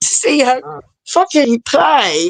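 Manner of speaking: slow, high, choked-up voice catching with emotion. A parent recalls seeing their daughter play at Strawberry Sundays: choking up emotionally. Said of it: "I'm getting emotional".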